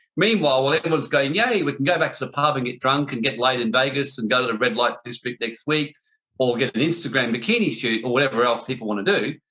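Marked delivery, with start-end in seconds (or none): none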